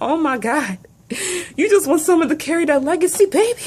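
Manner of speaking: very high voice, crying speech through tears. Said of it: "I'm crying again".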